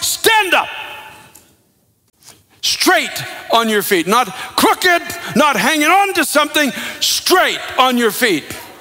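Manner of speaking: play-acted authoritative preacher voice. Telling the story of a man's healing, retelling a loud command. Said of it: "Paul says with a loud voice".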